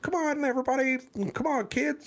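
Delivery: bright, chipper, very high-pitched cheering voice. Describing a couple urging on their complaining kids; mock-chipper couple. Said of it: "they're a chipper couple".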